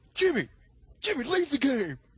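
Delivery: over-the-top ranting gamer impression. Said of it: "it almost sounds like he's exaggerating".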